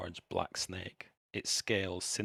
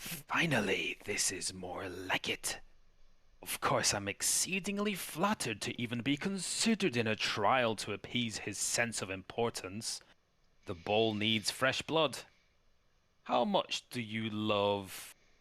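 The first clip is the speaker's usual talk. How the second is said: ghastly, horrific voice, love stretched out; 3 semitones higher than usual. Game master voicing a voice heard in a player's head, in a horrific voice. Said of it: "a horrific voice in your head".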